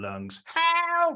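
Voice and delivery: high, loud, desperate shout at top of lungs. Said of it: "I want to shout at the top of my lungs".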